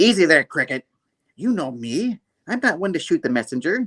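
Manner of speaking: bad put-on grand-lady woman's voice. Retelling a cartoon scene, voicing Madam Monstrosity: bad Madam Monstrosity voice. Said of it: "That voice was bad".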